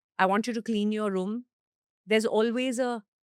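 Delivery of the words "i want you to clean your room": ordinary talk, nothing marked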